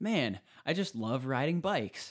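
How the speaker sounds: very joyous, loud, high-pitched declaration. Recounting riding bikes between a friend and brother, retelling a joyous announcement. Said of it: "announced in a very joyous".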